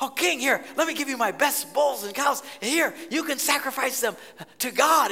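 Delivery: put-on thrilled, eager, excited host voice. Retelling a landowner offering the king his best bulls: imitating an excited landowner. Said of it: "he was so excited".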